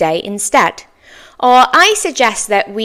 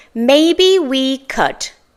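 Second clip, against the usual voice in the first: slow, careful, deliberate repeat of the phrase; 4 semitones higher than usual. Repeating a practice phrase for listeners to learn, said more slowly. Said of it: "I'll say that again more slowly".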